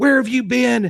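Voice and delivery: very high, shrill yelling and screaming. Recounting her bursting into the speaker's bedroom; retelling her yelling. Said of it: "she's yelling and screaming".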